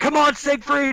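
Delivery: very high-pitched shout. Playing a character in a fight, yelling back at a dwarf ally: yelling back at someone. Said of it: "yelling back at him".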